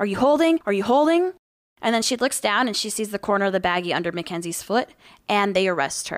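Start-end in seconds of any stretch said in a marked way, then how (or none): 0.0-1.3 shrill, loud screaming, demanding tone. Telling a story, acting out a female cop in a woman's face, retelling a cop screaming. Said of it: "starts screaming".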